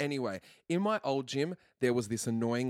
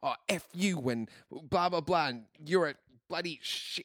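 mock mild angry outburst, half-yelled; 5 semitones higher than usual. Retelling what a gym client yelled while punching a bag: imitating a woman yelling. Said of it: "full on yelling out his name".

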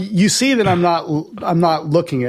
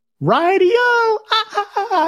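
very high, very slow, stretched-out cartoon voice. Remembering a cartoon, imitating Felix the Cat. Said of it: "he would go like this".

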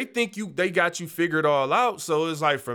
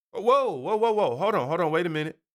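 ordinary talk, nothing marked

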